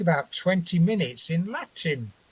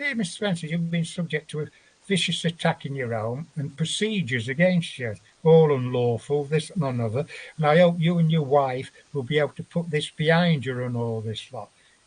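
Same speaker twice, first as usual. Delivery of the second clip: ordinary talk, nothing marked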